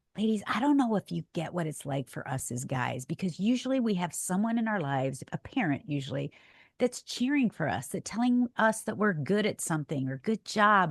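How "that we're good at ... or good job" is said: ordinary talk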